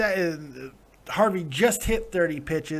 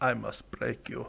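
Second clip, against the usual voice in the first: put-on Russian accent, lower in pitch and quieter; 6 semitones lower, 9 dB quieter than usual. Asked why he was made Ivan Drago, the speaker answers in Ivan Drago's Russian accent. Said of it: "why'd you make me Ivan Drago?".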